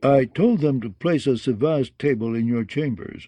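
ordinary delivery

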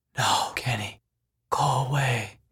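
slow, drawn-out, hushed half-whisper. Turning away a visitor who demands his secret, half-whispered. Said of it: "Moroni whispered".

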